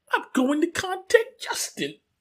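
very high, slow little voice. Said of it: "hooked him up with a little voice".

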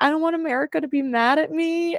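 play-acted words said through tears, crying. Retelling telling Jeff privately about a hard vote: retelling own tearful words. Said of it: "I was crying and I was like".

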